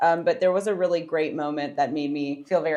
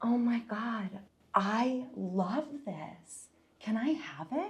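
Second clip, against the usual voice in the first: bright, eager, hopeful, pitched-up, very slow drawn-out voice; 6 semitones higher, 10 dB quieter than usual. Re-enacting holding up a shirt and asking for it: imitating own hopeful past self. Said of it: "Sparkly eyed, full of hope and optimism".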